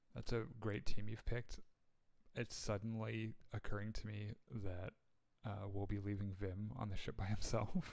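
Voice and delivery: very quiet, hushed voice. Pulling another player aside in character and speaking: very quiet. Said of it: "very quietly say".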